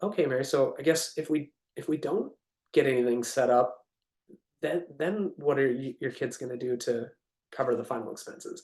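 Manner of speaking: low, soft, worried and caring tone. Demonstrating talking to Mary about final expenses: lowered, concerned tone. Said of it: "I drop my tone down to I'm concerned for them".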